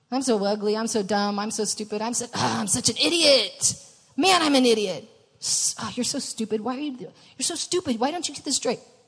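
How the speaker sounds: acted-out low mutter. Speaker acting out what listeners mutter to themselves, imitating muttered self-talk. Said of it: "what you have been muttering over and over".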